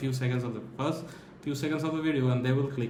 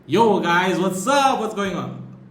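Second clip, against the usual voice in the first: screamed, very loud, high-pitched, hyped; 6 semitones higher, 10 dB louder than usual. Recalling greeting strangers in random online lobbies: loud, energetic greeting. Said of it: "I used to scream, not like scream, scream like in, like a madman, but like".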